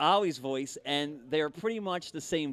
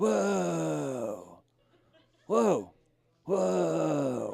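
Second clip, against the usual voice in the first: each whoa stretched out, creaky and rough. Having [name] do his best Keanu Reeves: Keanu Reeves impression. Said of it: "he'll do his best Keanu Reeves".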